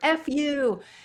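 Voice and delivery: mock shriek, very high, screamed. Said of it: "these guys are screaming out".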